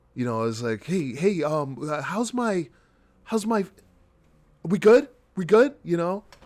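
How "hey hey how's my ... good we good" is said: put-on laid-back too-cool drawl, slow, pitched up. Imitating an actor on a reenactment show who acts too cool: imitating a too-cool actor. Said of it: "tries to act too cool for school".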